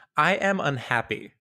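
deliberately earnest, fake sincere tone. Joking attempt at sounding earnest, on request: put-on earnestness. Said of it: "this is my attempt at being earnest".

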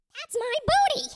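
screeching cry, very high, shrill and loud. A game narrator voices a character landing across from a player: screeching character voice. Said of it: "He kind of screeches and says".

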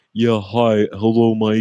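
slow, loud, drawn-out drawl. Imitating a podcast co-host greeting Mike: Snuffleupagus voice. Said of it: "He kinda sounds like Snuffleupagus".

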